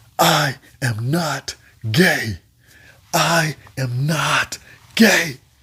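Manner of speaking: mock yelling. Retelling waking to a guy next door: imitating someone yelling. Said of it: "walking up and down the wing screaming".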